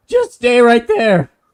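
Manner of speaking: very high, shrill, very loud shout. Voicing a character firing a warning shot over someone's head: yelling. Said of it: "as he yells out".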